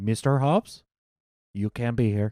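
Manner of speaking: cartoon frog puppet voice. Retelling what an accented man said to him, in a Kermit-like voice. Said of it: "were you hanging out with Mexican Kermit?".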